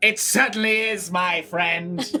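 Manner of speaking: put-on, fancy, highfalutin accent. A costumed character replies to a remark about his costume: highfalutin accent. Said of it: "you highfalutins talk up in Bright Crown?".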